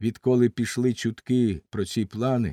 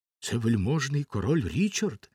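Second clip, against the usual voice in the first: ordinary delivery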